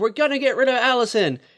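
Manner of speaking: put-on, high, loud blurted-out yell. Recapping a show episode where a cast member yells out, acting out the shout. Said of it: "Marcellus just yells out like".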